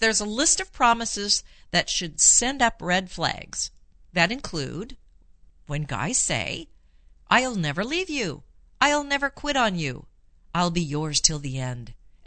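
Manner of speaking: normal talking voice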